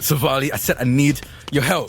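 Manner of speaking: insistent calling out, in character. Holding a brother pinned down in a scene, yelling at Savali. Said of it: "I'm gonna keep yelling".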